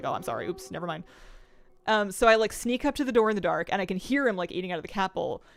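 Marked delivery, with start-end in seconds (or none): 0.0-1.0 soft, shocked, startled, caught-out tone. Voicing the dog caught eating from the cat bowl, imitating a shocked dog. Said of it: "he like gets a bit shocked".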